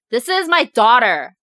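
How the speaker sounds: put-on angry yelling. Retelling how the dad defended his daughter to onlookers: imitating an angry dad. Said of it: "my dad got so mad and he's like".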